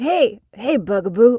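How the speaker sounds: very loud, belted, scruffy, deep cartoon hero voice. Answering a request for a best impression: Cat Noir impression. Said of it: "your best impression of the Cat Noir".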